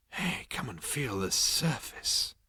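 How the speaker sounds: whispered under the breath, hushed and breathy. Narrating a story, a character calls another over to feel a surface, in a hushed voice. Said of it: "he said in a hushed voice".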